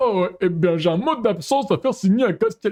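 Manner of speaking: high-pitched cartoon character voice. Reading out his game character's dialogue: Mr. Garrison voice. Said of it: "je suis en train de faire la voix de monsieur".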